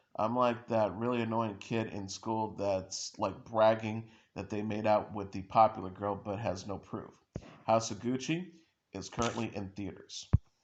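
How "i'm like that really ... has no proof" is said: usual speaking voice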